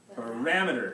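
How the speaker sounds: parameter with stress on second syllable 'ram'. A teacher models the word for the class, stressing second syllable of parameter. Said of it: "Second syllable. That's the stress".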